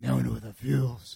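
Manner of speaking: gruff vigilante-style voice. Describing a movie moment they love, doing a Batman voice. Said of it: "It's a Batman voice".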